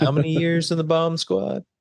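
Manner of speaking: play-acted heavy sarcasm, high and jabbing. Quoting a movie line with friends: imitating a sarcastic movie line. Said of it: "beautiful sarcasm".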